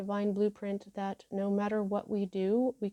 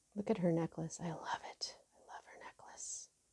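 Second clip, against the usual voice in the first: whispering, lower and quieter; 3 semitones lower, 10 dB quieter than usual. Showing a card's picture and admiring the necklace: whispering. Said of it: "Why am I whispering?".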